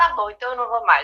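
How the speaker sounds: mock emotional, moved, near-tearful, almost crying voice. Retelling own childhood reply to mother: imitating being moved, near tears. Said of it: "eu ficava emocionada, quase chorando".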